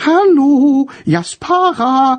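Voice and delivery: very high, piping, fluting voice. Reading a story, the narrator voices a character pretending to be a ghost: high fluting voice. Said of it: "flötete Tom mit hoher Stimme".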